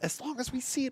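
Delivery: very high, hushed whisper. Commenting on a card game match while waiting to see the deck: whispering. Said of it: "which is why I'm whispering".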